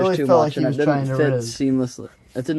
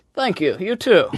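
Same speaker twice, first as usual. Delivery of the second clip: put-on British English accent, pitched high; 6 semitones higher than usual. Retelling how they thanked a man who handed them a package, british accent. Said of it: "bet I'll talk in a British accent".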